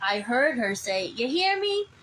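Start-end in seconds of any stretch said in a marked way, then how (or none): 1.1-1.8 put-on very high-pitched elderly woman's voice. Retelling what she heard someone say to her, in an old lady's voice. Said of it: "an old lady's voice".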